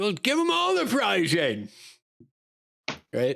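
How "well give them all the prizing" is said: high, swooping scream, sounding distant. Narrator voicing Zardoz calling out from somewhere to the stagehands, Zardoz's scream from somewhere. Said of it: "Zardoz's voice scream out".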